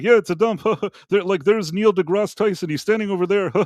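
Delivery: high-pitched, mumbled, offhand throwaway aside. Retelling what a comedian said at an underwhelming event: imitating David Cross mumbling. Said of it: "he kind of mumbled".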